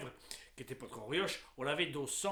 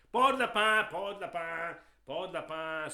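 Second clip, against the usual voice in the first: peddler's street cry, higher pitch; 4 semitones higher, 8 dB louder than usual. A storyteller recalls the village rabbit-skin merchant, rabbit-skin peddler's street cry. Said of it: "marchand de peau de lapin. / Oh, il avait la bosse de commerce, enfin. Il avait la bosse tout court, hein, oui. Oh, oh, là dans le dos, une vilaine bosse depuis tout petit. Mais bon, on est la vie, la".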